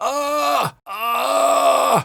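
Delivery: very high, rough, overly pressed, pushed ah. Demonstrating an extreme vocal sound for listeners, overly pushed voice. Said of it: "really intensify that sound and make it feel overly pushed".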